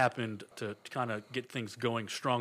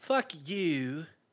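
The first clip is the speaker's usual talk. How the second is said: high, badly imitated put-on valley-girl voice; 5 semitones higher than usual. Recapping a game scene, voicing Junko Inoshima's line: Paris Hilton voice. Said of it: "I'm talking like Paris Hilton".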